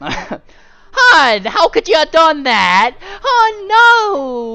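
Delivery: very high, very loud, drawn-out, shrill, swooping cafe voice. Voicing a character in trouble, putting on a cafe voice. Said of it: "I gotta get my cafe voice".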